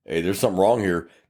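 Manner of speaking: usual speaking voice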